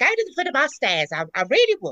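put-on stagey Cockney. Mocking how trained actresses play Cockneys in film, in stagey fake Cockney. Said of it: "they all talk like that".

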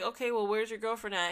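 usual speaking voice

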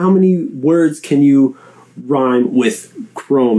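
normal talking voice

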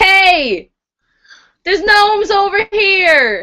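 high, long drawn-out, projected hey, yelled. Peeking up before firing, the speaker's character calls out to everyone: yelling. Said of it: "and I yell".

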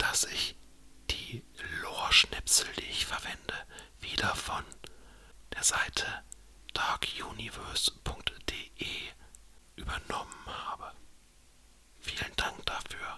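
whispered. Speaker whispering again before telling a background story, whispering. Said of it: "Ich flüster mal wieder".

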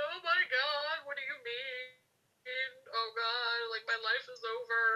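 tearful, crying, devastated, distraught disbelief. Retelling hearing news from a nurse, reenacting own past crying. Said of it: "I sit up and I'm crying".

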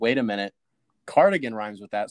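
ordinary delivery

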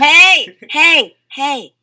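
loud protesting shout.

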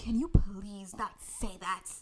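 whispered, begging tone.

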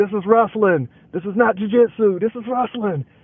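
mock high, insistent yell, repeated over and over. Retelling how the other speaker kept yelling: imitating someone yelling. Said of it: "you just kept yelling".

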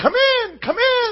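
high feminine voice. Telling a story, voicing an unseen voice calling a man inside, high-pitched feminine voice. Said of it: "a really kind of a high-pitched feminine voice say".

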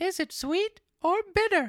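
very high, whining voice. Reading a story aloud, voicing Pinocchio's question, whining. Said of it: "asked in a whining voice".

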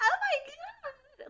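very high, shrill squeal, "God" stretched long. Retelling a reaction to a moment on the show: imitating own loud squeal. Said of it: "I literally squealed".

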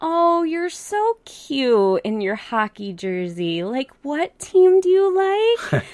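high, slow, condescending cooing voice. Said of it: "very condescending".

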